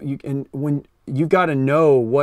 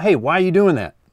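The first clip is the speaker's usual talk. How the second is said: confident, self-assured, direct, sure-of-itself tone; 3 semitones higher, 4 dB louder than usual. Speaker demonstrates one way to deliver a line, confident. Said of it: "It sounds like confident".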